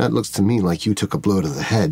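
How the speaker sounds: voice dropped low, leaning in close. In a role-play, a character speaks to an injured woman, voice lowered. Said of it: "I really lower my voice".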